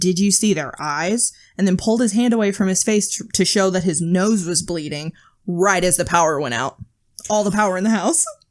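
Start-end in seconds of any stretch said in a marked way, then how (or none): none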